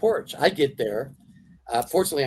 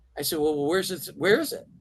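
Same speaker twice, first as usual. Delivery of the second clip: ordinary delivery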